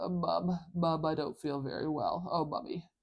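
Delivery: stuffy, congested, blocked-up head-cold voice. Explaining how a cold changes M sounds, in a stuffy congested nose voice. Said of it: "when you have a cold and your nose is really congested, your M sounds kind of sound funny. Like".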